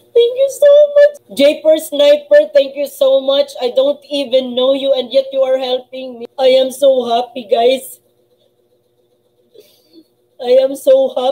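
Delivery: speaking while crying, tearful voice. A streamer thanks a viewer who helped their channel, crying while talking. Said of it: "that's why I am crying".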